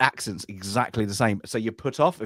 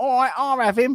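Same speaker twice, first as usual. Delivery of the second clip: put-on East London accent, higher and louder; 14 semitones higher, 4 dB louder than usual. Retelling a dubbed film character's line: imitating an east london accent. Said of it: "East London accent".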